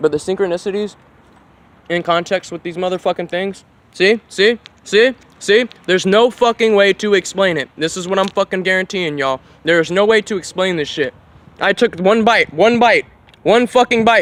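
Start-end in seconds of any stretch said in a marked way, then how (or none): 11.6-14.2 words mushed mid-chew, loud and high. Recording himself and talking to y'all mid-bite, talking with mouth full. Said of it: "I'm still chewing".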